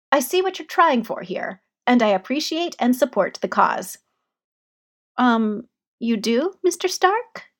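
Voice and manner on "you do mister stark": halting, unsure, hesitant, very slow voice. A narrator reads a character's reply in a conversation: hesitant. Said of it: "Peter said hesitantly".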